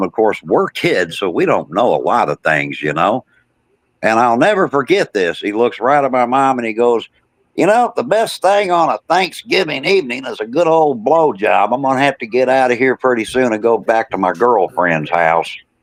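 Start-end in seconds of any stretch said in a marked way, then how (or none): 7.5-15.6 mock loud, big voice, sketched lightly, toned down. Retelling what a man said to the speaker's mom, imitating a loud talker. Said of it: "he's talking to my mom in a loud voice".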